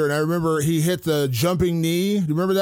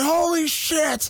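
full-on, high, slow mock yell. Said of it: "I full on yelled".

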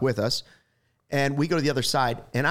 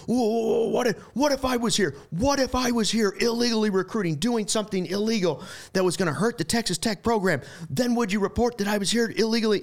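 acted-out heated, furious outburst, pitched up; 8 semitones higher than usual. A reporter retells a coach confronting another reporter: retelling Bobby Knight's furious outburst. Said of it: "the ears are turning bright red and the steam's coming out".

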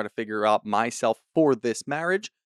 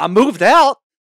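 thrilled proud excited voice, very high and very loud; 9 semitones higher, 10 dB louder than usual. Act out a man expecting dr. ken's praise, imitating someone excited, with a big smile. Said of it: "with a big smile on his face".

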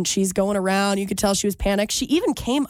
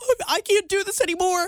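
put-on very high, tearful, crying four-year-old child's voice; 10 semitones higher than usual. Retelling how a little brother gave up, imitating a crying child. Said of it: "starts crying".

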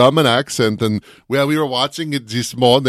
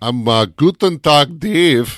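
put-on German accent; 3 semitones higher than usual. Podcast co-host introduces himself while testing out accents, put-on German accent. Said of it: "Dave has been testing out his accents a little bit today".

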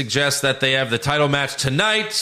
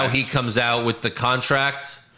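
plain

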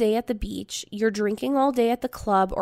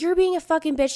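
mock heated, high-pitched screaming; 6 semitones higher than usual. Retelling a screaming fight in the bedroom: imitating screaming. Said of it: "She's screaming at me, and I was like".

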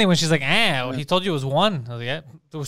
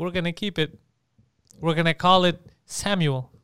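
normal talking voice

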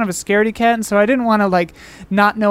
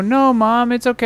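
ordinary talk

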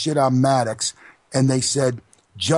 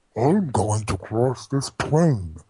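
put-on villain voice; 2 semitones lower than usual. Asked by the host to do one, a guest gives a Bane impersonation. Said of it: "do me a Bane impersonation".

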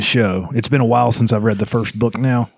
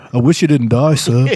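put-on Liverpool accent; 3 dB louder than usual. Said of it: "like a little bit like [name]".

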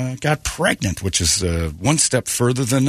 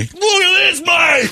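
loud, very high, put-on Australian accent holler; 5 dB louder than usual. Retelling an Australian who held a turtle up to them: imitating an Australian accent. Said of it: "I got this Australian holding one".

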